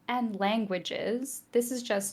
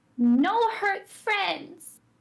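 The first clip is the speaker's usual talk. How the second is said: very high, loud yell in character voice; 9 semitones higher, 7 dB louder than usual. Voicing a character launching an arrow: yelling in character. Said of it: "Cora is going to yell in deep speech".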